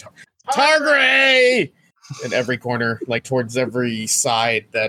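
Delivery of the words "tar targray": shrill, very high, loud yell. Calling out for a lost companion: yelling a name. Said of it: "and I'm just yelling".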